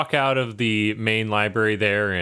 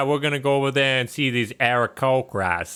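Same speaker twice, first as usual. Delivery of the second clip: put-on Boston accent, higher; 3 semitones higher than usual. Saying Aarakocra when asked to try it: Boston accent. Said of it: "try to say Aarakocra with a Boston accent".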